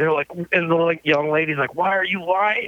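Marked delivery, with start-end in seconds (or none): 1.7-2.7 mock, mild, half-yelled, accusing tone. Retelling an airport officer questioning a drummer: imitating someone yelling. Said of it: "I can hear the kind of the yelling".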